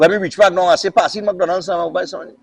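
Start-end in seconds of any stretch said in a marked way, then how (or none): none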